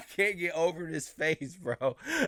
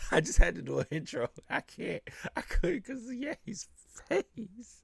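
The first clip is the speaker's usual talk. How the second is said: high, tearful speech, crying with laughter; 5 semitones higher, 5 dB quieter than usual. Apologizing while trying to do an intro, laughing to tears. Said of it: "I'm in tears right now".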